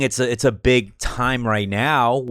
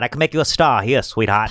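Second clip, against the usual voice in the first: put-on old-fashioned detective voice. Acting out handing over a card: old-timey private eye voice. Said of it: "Private Eye dumb".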